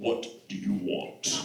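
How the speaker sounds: very slow, breathy, drawn-out devil voice. Acting out the devil answering the door, in a Darth Vader voice. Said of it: "the devil sounds like Darth Vader".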